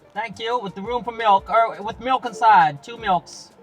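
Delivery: put-on American accent. In a coffee-shop skit, the server takes a customer's order: put-on American accent. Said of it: "My American accent".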